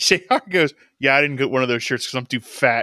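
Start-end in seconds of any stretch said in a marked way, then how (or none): 1.0-2.8 muttered under the breath. Retelling a line said during an entrance: imitating a mutter under the breath. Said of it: "under his breath".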